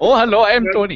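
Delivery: put-on Indian-sounding impression. Trying the Tony impersonation again: bad Tony impersonation drifting Indian. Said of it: "It usually goes Indian Tony".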